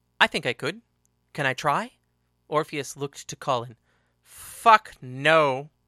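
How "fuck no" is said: level, flat, deadpan, loud. Asked whether another may try the fight, he refuses; flat. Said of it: "said Colin flatly".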